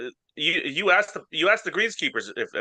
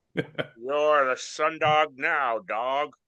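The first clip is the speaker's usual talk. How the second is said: put-on old-timey 1920s gangster voice. Showing another speaker how the voice should go, old-timey 1920s gangster voice. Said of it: "Is that is that better?".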